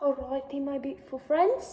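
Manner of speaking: bad, weak fake British accent drifting Scottish. Opening the video with a greeting in a bad put-on British accent. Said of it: "my videos with a British accent, but it's not even good".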